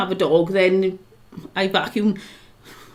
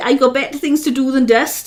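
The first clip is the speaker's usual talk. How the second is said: normal talking voice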